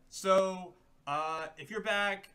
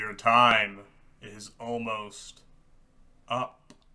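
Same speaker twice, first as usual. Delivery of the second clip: very deep, low, loud, looming wraith voice; 8 semitones lower, 8 dB louder than usual. The narrator voices the wraith speaking to the party, in a low wraith voice. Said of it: "You hear his low voice".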